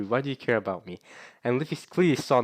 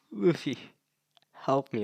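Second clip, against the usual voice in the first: mock tearful sobbing, crying voice; 2 semitones higher than usual. Retelling a scene where a character pleads for help: imitating someone crying. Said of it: "as she's crying, she's like".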